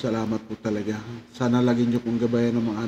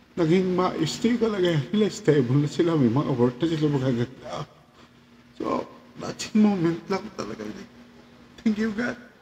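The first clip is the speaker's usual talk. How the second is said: teary voice, on the verge of tears; 7 semitones higher than usual. A parent talks about their children doing well: tearful. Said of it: "hindi ko alam bakit naiiyak ako".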